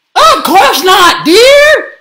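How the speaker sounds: very high, very loud shriek. Reading a story, Gabby's mom answers Gabby after the moon breaks: screaming. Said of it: "Screamed Gabby's mom".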